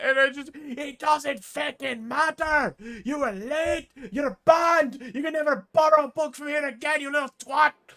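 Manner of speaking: very high, very loud, shrill, furious angry yelling. A character scolding someone who returned a book late, yelling angrily. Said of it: "the kid is just bawling".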